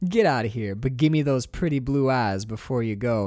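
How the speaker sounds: play-acted unsettlingly cheerful, bright, cheery tone. Retelling a movie palm reading scene: imitating a smiling delivery. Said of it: "but she keeps smiling".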